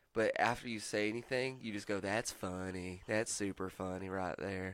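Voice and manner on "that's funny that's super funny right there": heavy Southern accent, laid on thick. Showing an accent being worked on for video games: super Southern accent. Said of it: "it's like a super Southern accent".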